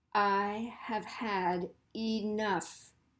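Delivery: even stress on every word of I have had enough. Showing how irritated, determined speakers talk, with equal stress on every word. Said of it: "give the full equal stress to every word and every syllable".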